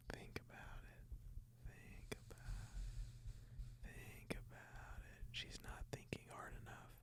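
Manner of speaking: very quiet, breathy whisper. On a podcast, joking about turning it into an ASMR show, whispering. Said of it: "I'm whispering".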